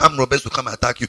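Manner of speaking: quick, soft, mock-solemn intoning.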